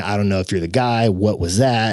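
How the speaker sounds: plain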